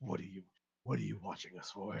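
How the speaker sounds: hushed, quiet voice with pressing, grilling intensity. Retelling a man pinning another against a wall and questioning him: quiet interrogating voice. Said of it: "like in a quiet voice".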